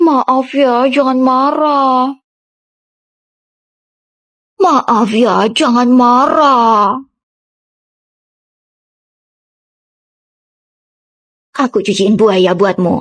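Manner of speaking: sweet, coy, flirtatious tone. Teaching how to apologize flirtatiously, then demonstrating the line: flirtatious apology. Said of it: "cara minta maaf dengan genit".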